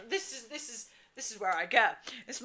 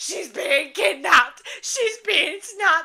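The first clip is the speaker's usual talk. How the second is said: mock screaming, much higher, louder, and slower; 9 semitones higher, 8 dB louder than usual. Retelling how a friend screamed at the bouncers: imitating a friend screaming. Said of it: "my friend is screaming at them".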